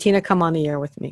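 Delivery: plain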